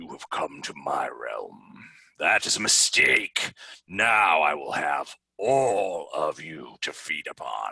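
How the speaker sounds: giant smoke-monster voice. A game master speaks as the creature confronting the players, in a creature voice. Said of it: "And you hear it in the same voice".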